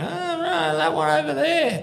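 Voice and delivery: play-acted, very high, raw, rough screaming outcry. Retelling how someone at an incident points others out: imitating someone screaming. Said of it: "screaming, going".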